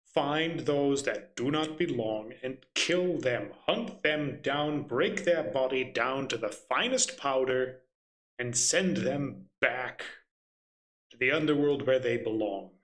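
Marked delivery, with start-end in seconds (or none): none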